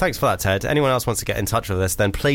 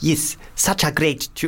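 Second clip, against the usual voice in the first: slow, mock South African accent. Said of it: "I'm going full".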